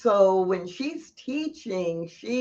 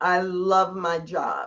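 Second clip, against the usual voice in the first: flat, matter-of-fact, emotionless. Showing how an affirmation sounds without feeling: flat, matter-of-fact. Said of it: "did you hear how I said it?".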